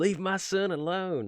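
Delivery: very high, very slow Southern drawl. Voicing an imagined card character protecting the bird: Mother of Runes southern accent. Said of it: "why she has a southern accent".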